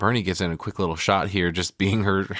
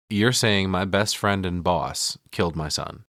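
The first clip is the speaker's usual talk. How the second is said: normal talking voice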